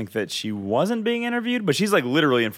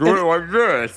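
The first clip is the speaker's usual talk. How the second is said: put-on voice spoken with fingers in mouth; 5 semitones higher, 5 dB louder than usual. Retelling a game scene, imitating Tidus talking with fingers in mouth. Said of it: "talking with his fingers in his mouth, so he sounds all".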